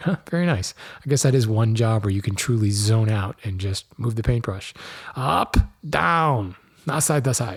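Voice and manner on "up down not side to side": bad, very slow, every word drawn out. Joking about painting with a brush: Mister Miyagi impression. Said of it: "That was my worst Mister Miyagi impression".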